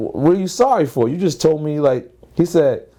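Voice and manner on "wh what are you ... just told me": plain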